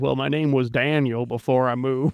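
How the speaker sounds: put-on rural country farmer accent. Imitating Gaius dropping into his farmer accent again: Gaius farmer accent. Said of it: "drops into his, uh, his, uh, farmer accent again and goes".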